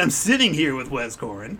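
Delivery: put-on radio announcer voice, business-like. Opening a mock podcast in business mode, in an announcer radio voice. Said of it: "This is my radio voice".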